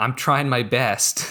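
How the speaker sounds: imitated choked-up voice. Retelling a scorekeeper's line from the movie, imitating a choked voice. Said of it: "choked voice almost of".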